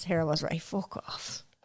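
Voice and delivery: soft, whispered, mocking tone.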